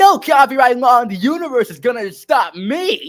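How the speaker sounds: high, loud, defiant cry, belted and drawn out. Showing how to replicate a Sonic voice: Roger Craig Smith Sonic voice. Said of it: "for Roger Craig Smith, it's a little hard for me".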